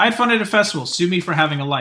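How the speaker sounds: ordinary delivery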